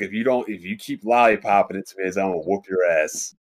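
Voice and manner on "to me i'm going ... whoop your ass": ordinary talk, nothing marked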